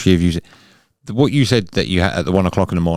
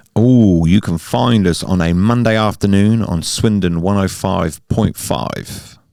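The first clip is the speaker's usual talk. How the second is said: on-air radio announcer delivery. Plugging the hosts' radio show time slot, radio presenter voice. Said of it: "It's radio voice".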